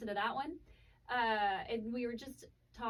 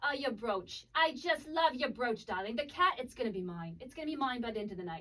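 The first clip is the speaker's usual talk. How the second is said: put-on, slightly English accent; 3 dB louder than usual. Retelling what a woman first said to them, using a put-on slightly English accent. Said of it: "that kind of went a little English".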